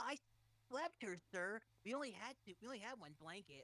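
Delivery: small, funny, raspy little voice. Speaker imitates how someone else voiced the character: raspy Kid Goku voice. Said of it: "that funny little raspy Neanderthal voice".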